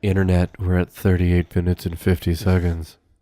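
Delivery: put-on seductive voice. Announcing the running time to the internet, joking: mock sexy voice. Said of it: "That's my sexy voice".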